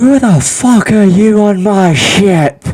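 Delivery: shrill, high-pitched, drawn-out pirate captain shout. Voicing the ship's captain who spots intruders: loud shouting ship captain. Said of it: "the captain kinda shouts out".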